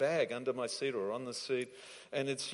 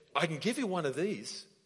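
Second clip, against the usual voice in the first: excited, eager, earnest tone full of faith; 4 semitones higher than usual. Telling a story, the speaker quotes a man offering a plant: imitating an excited offer. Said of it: "he said it with excitement and with faith".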